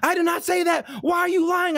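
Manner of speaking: full-fear shock, terrified, voice very high. Retelling how the woman in a video reacted: imitating a terrified woman. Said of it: "in like full fear, like shock mode".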